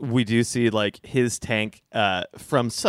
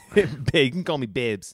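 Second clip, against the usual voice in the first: bad put-on thick Boston accent; 2 semitones higher than usual. Playing a character from Boston named Babs, in a bad Boston accent. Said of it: "keep this accent up".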